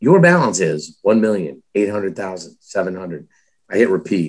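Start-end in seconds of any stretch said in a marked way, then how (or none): 0.0-3.3 recorded automated phone-line announcement voice. Speaker retelling calling the bank's 1-800 number alone on Christmas Eve, Chase automated phone voice. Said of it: "the automated voice is like".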